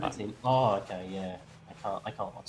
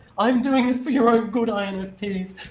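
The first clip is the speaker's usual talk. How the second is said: mock tearful voice, higher and louder; 13 semitones higher, 12 dB louder than usual. Retelling someone's words to INFPs: imitating someone crying. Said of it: "he starts crying and he's like".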